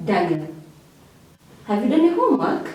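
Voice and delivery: pitch climbing up through homework. Demonstrating a yes-or-no question to daniel about homework, rising question intonation. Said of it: "that tone is already a rising intonation".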